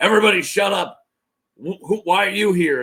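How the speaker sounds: put-on commanding old-man character voice. Retelling a scene from the book, voicing the character: Old Griff voice. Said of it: "that voice for Old Griff".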